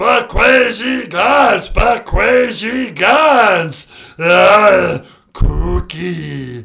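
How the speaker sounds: mock gravelly monster voice. Calling in to a podcast as Cookie Monster: Cookie Monster voice. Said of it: "You sure love those cookies".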